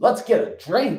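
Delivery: play-acted snippy tone. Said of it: "reading it like the guy's giving him an attitude".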